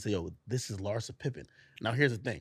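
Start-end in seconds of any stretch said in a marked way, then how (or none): 0.1-1.5 quiet, hushed whisper. Retelling how a friend introduced someone at a party: imitating a whisper. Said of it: "he whispers to me".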